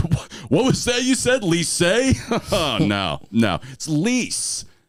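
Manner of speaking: smug, condescending, superior, drawn-out sing-song tone. Retelling how a dance judge corrected French words: imitating someone speaking smugly. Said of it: "But in this very smug way".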